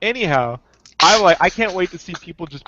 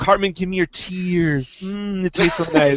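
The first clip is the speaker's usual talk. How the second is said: normal talking voice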